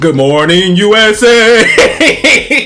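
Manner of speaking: very slow, rasping, loud, drawn-out, rising screeching yell.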